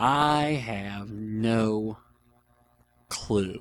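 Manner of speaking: slow, musing, thinking-aloud tone with drawn-out "no". Host answering a submitted question about his life, talking slowly while thinking. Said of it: "I'm talking slowly because I'm thinking".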